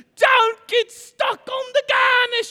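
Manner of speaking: shrill, booming, very loud, high-pitched scream. Retelling a cooking scene where the chef screams at a cook: imitating Gordon screaming. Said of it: "You know how Gordon does it".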